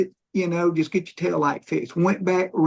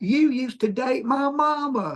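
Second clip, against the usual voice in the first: loud, pitched-up, blurted out; 7 semitones higher than usual. Retelling what a woman said on seeing his name on the ticket; retelling a loud remark. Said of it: "in a loud voice".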